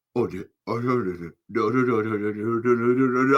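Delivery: acted panicked voice. Recounting the show's opening with Orpheus, acting out panicking. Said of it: "like I am panicking".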